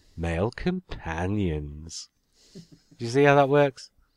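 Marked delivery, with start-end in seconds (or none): 0.2-2.1 suggestive delivery, much lower and quieter. Podcast host shows how the episode's subject could be said, like a euphemism. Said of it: "especially if you said it like this".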